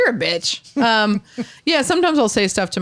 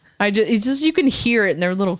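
ordinary talk

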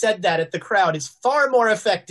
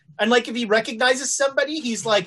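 ordinary talk

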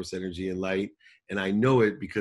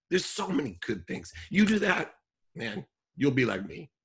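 emotional, choked-up, pitched-up voice catching near tears; 8 semitones higher than usual. Talking with David, choking up. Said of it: "I'm choking up".

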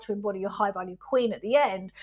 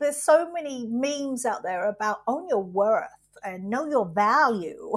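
odd, unnatural, put-on American accent. Speaker slips mid-thought into a weird american accent. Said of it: "in a weird American accent".

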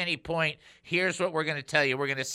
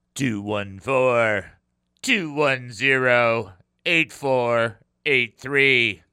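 mean robotic machine voice, lower; 4 semitones lower, 7 dB louder than usual. Show host reading out the text line number in a robotic, mean machine voice. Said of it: "Kind of a very robotic, mean machine voice".

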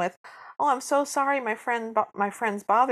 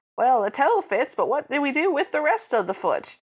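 weird fake, almost-Cockney British accent; 3 semitones higher, 3 dB louder than usual. Retelling a scene, doing the Grand Duke's weird Cockney accent. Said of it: "who's got like a weird almost Cockney accent, like it's a weird British accent".

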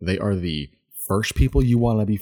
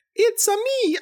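very high-pitched, squeaky put-on character voice. Predicting how the actor will play Mario: Chris Pratt doing Mario voice. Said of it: "here's how it's gonna go".

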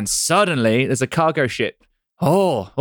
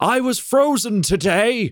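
very slow, stretched-out, high screaming, acted out; 9 semitones higher than usual. Recounting a film line screamed at Hulk Hogan: Christopher Lloyd scream impression. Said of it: "Christopher Lloyd just screams".

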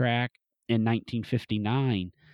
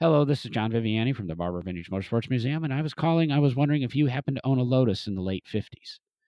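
rushed, very fast patter, rattled off in one breath. Retelling his own phone call to a stranger, saying it really fast. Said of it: "you've got to say it really fast".

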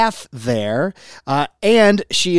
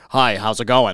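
deep, low put-on authoritative man voice; 5 semitones lower than usual. Retelling a guy met awkwardly at a door, imitating his put-on deep voice. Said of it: "He really put on the deep voice".

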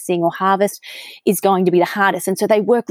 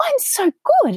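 tiny squeaky voice, very high. Recalling her default answer when people asked how she was, imitating her little high voice. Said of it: "I'd have this really little high pitch in my voice".

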